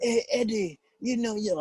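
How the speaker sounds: high-pitched voice with laughter.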